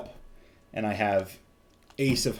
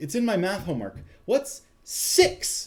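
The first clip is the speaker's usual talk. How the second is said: mock thrilled, very high, excited, swooping pitch; 9 semitones higher than usual. Retelling the mother asking about math homework: imitating someone really excited. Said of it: "really excited".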